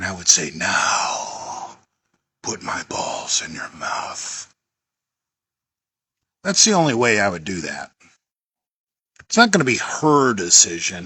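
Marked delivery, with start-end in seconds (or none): 0.5-4.5 very slow, low, hushed, commanding whispered father voice. Acting out a hypothetical command in bed: put-on father voice, real low. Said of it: "I would get in my father voice, and I would get my voice real low".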